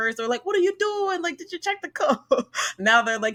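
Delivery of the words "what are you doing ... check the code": very high-pitched, irate, accusing angry voice. Retelling what construction workers asked about the building code; mock-angry person accent. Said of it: "my angry person accent".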